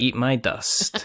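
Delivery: mock sarcastic, in-your-face gloating. Retelling how he taunts other players after winning: imitating in-your-face gloating. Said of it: "declaring my victory in your face".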